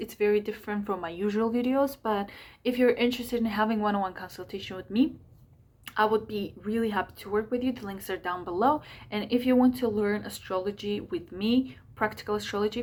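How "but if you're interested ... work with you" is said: fast, hurried speech. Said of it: "That's why I'm speaking so fast".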